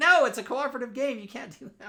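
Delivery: very high shrill yell. Retelling yelling at another player in a cooperative game: imitating own past yelling. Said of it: "I was yelling at her".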